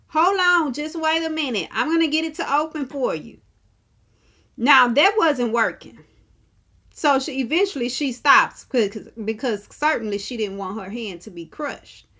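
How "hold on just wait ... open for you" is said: acted-out, pitched-up calling out. Retelling a woman at closing elevator doors calling to a man, imitating her yelling. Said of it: "she's yelling at this man".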